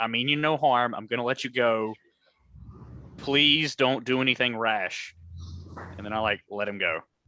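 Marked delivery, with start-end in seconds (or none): 0.0-5.1 slow, deliberate stage half-whisper. Half-whispering to a frightened little boy before letting him go: half-whispering in character. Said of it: "whisper to him".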